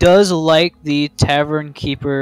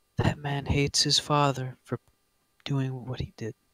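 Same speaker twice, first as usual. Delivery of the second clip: soft small feminine voice, quieter; 3 semitones lower, 13 dB quieter than usual. Voicing a voice that a player's character hears: small feminine voice. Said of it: "That same sort of a small feminine voice".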